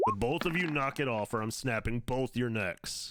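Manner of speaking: commanding, flat-out authority, no argument. Voicing Tharnak ordering two brawlers to stop: bellowing with authority. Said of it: "you just hear Tharnak bellow out".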